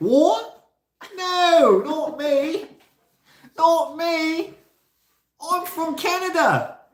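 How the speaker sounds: put-on very high, very slow Australian accent. Retelling her own mimicking reply to someone from England: imitating self in Australian-sounding accent. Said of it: "It sounded Australian all of a sudden".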